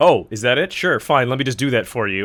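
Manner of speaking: put-on bratty, childish, sarcastic put-down tone. Retelling what was typed into chat during a game: retelling a sarcastic, childish remark. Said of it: "sarcastically and childishly decided to type into chat".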